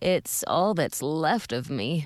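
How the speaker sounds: weak, faint, slow groaning voice. A man lying below answers a woman's call, in a faint voice with a groan. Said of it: "a faint voice said with a groan".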